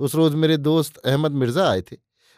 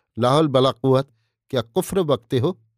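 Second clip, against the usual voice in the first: usual speaking voice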